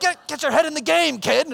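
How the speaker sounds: high-pitched, rough, loud yelling. Retelling coaching little kids through a course, acting out yelling at kids. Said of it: "I've never yelled so much at little kids".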